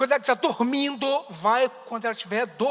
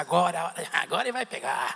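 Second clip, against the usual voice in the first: soft, raspy, creaky little imp voice; 6 semitones lower, 5 dB quieter than usual. Acting out a little devil gloating at a tense moment: little devil voice. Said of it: "O capetinha fica assim".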